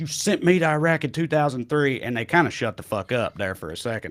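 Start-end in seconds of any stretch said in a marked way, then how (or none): 0.0-2.0 acted high, raised, accusing angry scream. Recounting a man confronting a crowd that booed him: retelling a scream. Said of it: "And then he screams".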